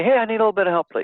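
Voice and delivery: talking really quickly. Showing how a caller on the phone might sound, talking really quickly. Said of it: "you're talking really quickly".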